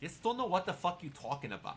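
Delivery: put-on Brooklyn accent. Trying out an accent, Brooklyn accent. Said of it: "that's more Brooklyn".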